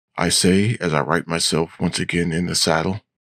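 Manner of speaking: usual speaking voice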